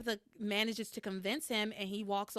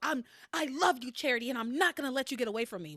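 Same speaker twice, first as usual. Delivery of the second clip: mock-dramatic, overwrought, acted delivery; 3 semitones higher than usual. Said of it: "very Lifetime movie coded".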